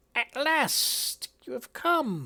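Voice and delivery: high crackling crone voice, dry like weeds. A storyteller voices a hunched crone peering into a crystal ball; crackling crone voice. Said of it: "her voice crackles like dry weeds".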